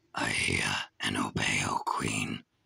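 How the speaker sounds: very low, rough growling wolf voice. Narrator reading a story, the wolf answers the Queen in a growling wolf voice. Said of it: "growled the wolf".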